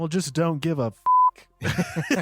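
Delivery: toned-down delivery, high-pitched and swooping. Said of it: "dial it back".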